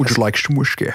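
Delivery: put-on Scottish accent. Doing a Sean Connery accent when asked to: Sean Connery accent. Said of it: "Sean Connery".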